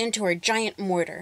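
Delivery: ordinary delivery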